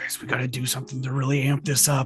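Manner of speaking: in a whisper. Speaking in character to the group about amping things up: whispering. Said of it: "I whisper in my mouth".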